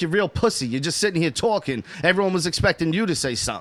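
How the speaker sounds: ordinary delivery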